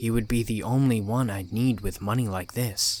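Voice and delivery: plain reading voice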